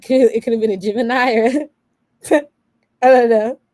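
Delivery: talking through laughter. Guessing which sign the lover could be, laughing while talking. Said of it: "I can't stop laughing".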